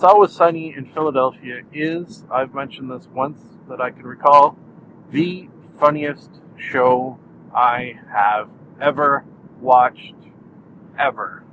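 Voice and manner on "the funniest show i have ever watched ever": slow, deliberate, every word drawn out unhurried. Making a statement about a tv show, said slowly. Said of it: "I said that sentence slowly, and then I proceeded to leave a longer than probably normal pause after it".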